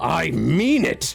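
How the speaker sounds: yelling in a villain character voice. Voicing a villain who sees pixies appear, yelling. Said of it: "he's going to yell".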